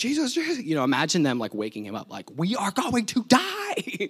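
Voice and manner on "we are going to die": acted very high, stretched-out panicked scream. Retelling people waking Jesus as they go under, imitating panicked screaming. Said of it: "All that screaming".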